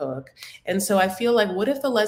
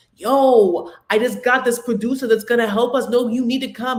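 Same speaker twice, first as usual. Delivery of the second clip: put-on loud, wild, strong New York Bronx accent; 3 semitones higher, 6 dB louder than usual. Retelling what David said about a producer: imitating David's crazy Bronx accent. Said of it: "That accent is crazy".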